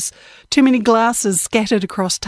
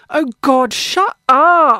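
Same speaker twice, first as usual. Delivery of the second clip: put-on very slow, slurring, drunken drawl; 5 semitones higher, 3 dB louder than usual. Reading a story aloud, a girl at the bar interrupts: slurred speech. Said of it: "slurred some girl at the bar".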